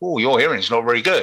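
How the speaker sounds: ordinary talk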